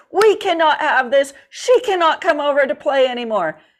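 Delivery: put-on loud, furious, angry fatherly voice. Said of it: "he was very loud about it".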